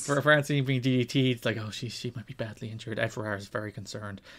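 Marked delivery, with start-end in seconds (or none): 1.6-4.2 very quiet, hushed, concerned commentator murmur. Retelling how wrestling commentators covered an injury: imitating hushed commentator tones. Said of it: "hush tones".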